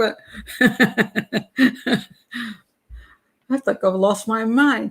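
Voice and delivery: giggly speech with laughter running through the words. Criminal profiler greets her chat room, laughing while talking. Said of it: "I don't know why I'm laughing".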